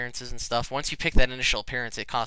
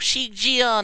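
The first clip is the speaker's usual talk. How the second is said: put-on tiny, very high, girly little-girl voice; 11 semitones higher, 4 dB louder than usual. Explaining why little girl voices sound ridiculous, imitating one: little girl voice. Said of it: "these little little gir girl voices go".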